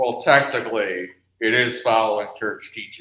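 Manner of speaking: icy, cold, by-the-book legalistic tone. Guessing how Chad would answer a question, imitating Chad's cold legalistic tone. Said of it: "he does have that sort of very cold, legalistic".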